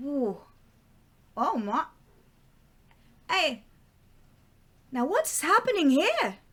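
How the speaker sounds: confused, dazed put-on Irish accent. Playing a woman in the story who just took a pill, irish accent. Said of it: "She has an Irish accent, okay? I feel ashamed of myself. She has an Irish accent. / She has an Irish accent".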